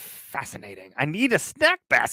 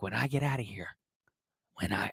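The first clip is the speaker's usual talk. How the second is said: put-on gravelly drawl, lower and quieter; 5 semitones lower, 10 dB quieter than usual. Imagining what a defendant might say while drawing courses: Jack Nicholson voice. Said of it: "she kinda sounds like Jack Nicholson".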